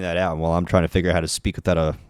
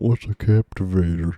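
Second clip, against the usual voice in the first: most exaggerated Southern accent possible. Quoting a friend from outside Roblox asking a question, exaggerated southern accent. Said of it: "in the most southern accent possible".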